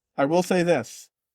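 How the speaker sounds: ordinary talk, nothing marked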